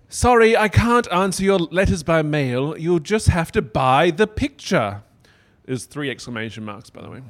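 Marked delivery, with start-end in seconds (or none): 0.1-5.0 put-on slight British accent, raised and higher pitched. Reading a letter aloud after being asked for a different voice: a little british accent. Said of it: "maybe a little British this time".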